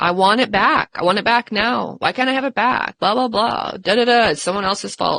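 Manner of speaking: whiny, pushy, insistent demanding tone. Retelling a daughter's demands: imitating a demanding whine. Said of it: "she started demanding".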